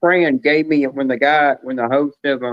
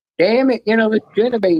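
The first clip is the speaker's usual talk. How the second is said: high, put-on feminine woman's voice; 8 semitones higher than usual. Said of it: "it sounds just like a woman over the phone".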